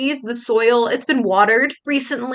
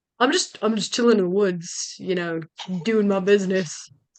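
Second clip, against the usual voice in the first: very deep, soft put-on creature voice; 5 semitones lower, 5 dB quieter than usual. Voicing the creature in the story as it looks at you, very deep voice. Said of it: "it says in um a very deep voice".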